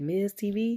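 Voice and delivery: ordinary talk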